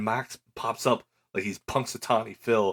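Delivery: ordinary delivery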